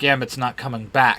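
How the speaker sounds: plain reading voice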